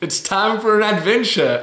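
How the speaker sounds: forced bright cheerfulness. Showing how the Canadian version of a line sounds: big smile, even if fake. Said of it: "You have to have a big smile, even if it looks fake".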